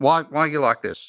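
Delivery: choppy, word-by-word broken English. A husband retelling what his wife said to him, imitating her staccato English. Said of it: "she speaks in a staccato English".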